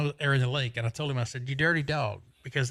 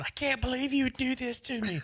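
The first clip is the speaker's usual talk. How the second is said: yelling, screaming, pitched higher; 11 semitones higher than usual. Retelling screaming at Bill as he lands in the water: retelling own screaming. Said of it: "over there screaming at him, going".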